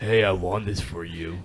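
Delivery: very slow, drawn-out, put-on tough-guy bass voice. Retelling handing over a prize won for her: put-on extra deep voice. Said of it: "put that deep voice on".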